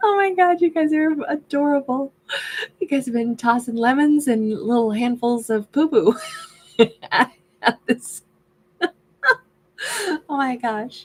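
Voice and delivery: laughing while talking. Reacting to viewers' comments during a reading, laughing while talking. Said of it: "I'm sorry I'm cracking up so much".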